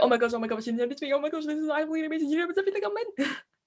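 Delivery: high, rushed, frantic, rattled-off freaking out. Picturing the guest's reaction to being recognized, mock freaking out, fast. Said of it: "freaking out, talking really fast".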